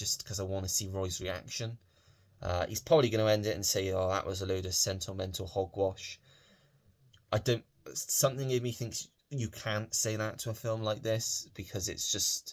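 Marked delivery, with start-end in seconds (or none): none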